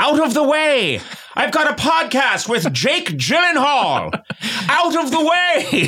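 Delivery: very high put-on voice, half yelled. Retelling running late in traffic, retelling a yell out the window. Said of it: "I'm practically yelling out the window".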